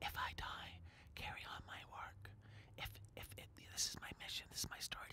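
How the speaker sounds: acted whisper. Speaker retelling a reality-show scene where one woman pulls another close, retelling a whisper. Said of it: "she pushes her close and whispers".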